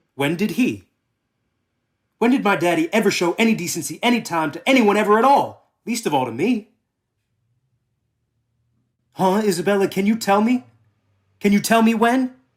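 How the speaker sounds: furious, loud, angry shouting. Demanding an answer about his daddy's decency, shouting angrily. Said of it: "Don't shout at me".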